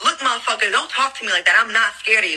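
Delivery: ordinary talk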